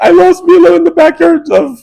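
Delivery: very high, slow, tearful sob-talk. Retelling how the daughter came back crying for help: imitating Maddie crying. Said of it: "crying with tears".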